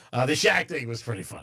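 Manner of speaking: normal talking voice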